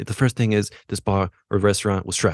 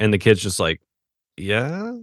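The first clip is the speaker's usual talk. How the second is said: plain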